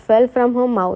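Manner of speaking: ordinary delivery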